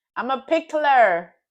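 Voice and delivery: very loud, high, put-on attempted American accent. The speaker switches into their best American accent. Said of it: "In my American best American accent".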